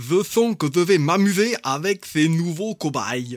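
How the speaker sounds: put-on mad scientist with German accent. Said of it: "vous me l'avez tous fait avec un accent allemand".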